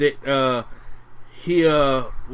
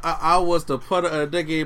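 usual speaking voice

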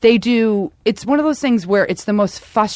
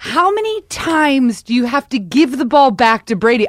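play-acted, slow, screaming outburst; 5 semitones higher than usual. Retelling how everyone reacted to the game on TV: imitating screaming at the TV. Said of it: "we're all screaming at the T V".

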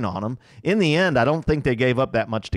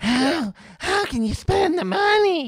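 scoffing put-on voice, pitched way up, slow. Retelling how a show host mocked fans: imitating someone mocking fans. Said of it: "and he does his voices".

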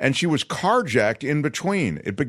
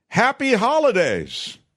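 put-on, high-pitched shouting out; 7 semitones higher than usual. Retelling a news story about a woman in Alabama: imitating a woman shouting. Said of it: "was shouting".

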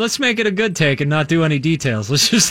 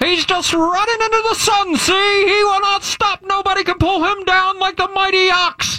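put-on very high voice, flat and emotionless; 13 semitones higher than usual. Narrating a football play replay, Bane voice. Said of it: "when you do the Bane voice".

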